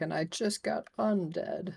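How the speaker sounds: very high, slow, defeated zombie whine. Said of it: "He's like".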